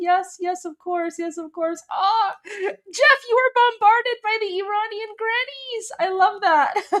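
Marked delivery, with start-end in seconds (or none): 0.0-1.8 courteous, accommodating, patient, polite tone. Retelling how Jeff answered the Iranian grannies: imitating Jeff being polite. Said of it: "Jeff is being so polite. He's like".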